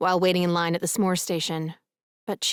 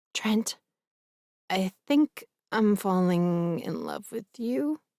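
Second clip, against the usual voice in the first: hushed, whispering voice. Reading a romance aloud, a character rehearsing a confession: whispering. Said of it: "I whisper to my reflection".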